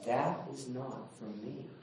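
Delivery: gentle, tender, soft fatherly voice. Retelling a dream where god leans down and answers: imitating a tender voice. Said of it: "in a tender way says".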